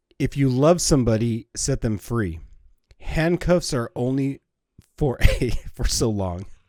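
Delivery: slow delivery through laughter. Reading a fortune aloud and cracking up at the word handcuffs: laughing while reading. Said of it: "I just started laughing".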